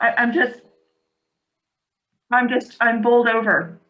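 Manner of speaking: talking while chewing, mouth full. Speaking to everyone after a hot dog eating contest, talking with mouth full. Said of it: "Sorry to eat with my mouth".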